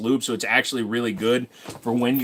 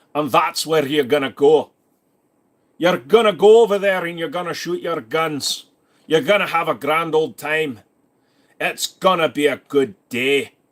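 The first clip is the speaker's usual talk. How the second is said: loud, fake, put-on Scottish accent; 4 semitones higher, 5 dB louder than usual. Answering a viewer from Scotland about gun ranges: put-on Scottish accent. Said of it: "I should be talking like you".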